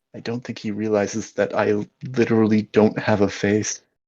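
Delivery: quiet, soft, hushed voice. Voicing an unseen presence that speaks near a player's ears: quiet voice. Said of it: "you hear a voice quietly say".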